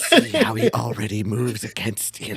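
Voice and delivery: put-on whisper. Quoting an earlier line back to the group, whispering like the Dark Lord. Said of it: "the Dark Lord whispering".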